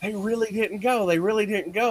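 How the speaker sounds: put-on panicked, frantic voice, very high pitch. Retelling phoning someone after a shock: imitating own frantic voice. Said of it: "I'm frantic".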